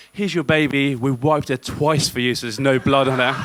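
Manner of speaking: snarky, heavily sarcastic tone. Retelling what a nurse said after the birth: imitating a sarcastic nurse. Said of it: "really sarcastically".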